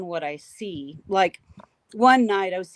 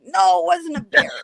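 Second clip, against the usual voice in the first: rough, very high, shrill, angry raised voice; 10 semitones higher, 5 dB louder than usual. Retelling arguing with a sister on the phone: imitating own angry retort. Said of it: "I'm getting mad".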